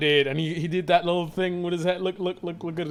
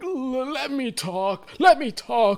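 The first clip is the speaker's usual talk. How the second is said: put-on frustration, high and drawn out; 7 semitones higher than usual. Showing how liars try to seem believable, in mock frustration. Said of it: "you try to pretend like you're frustrated".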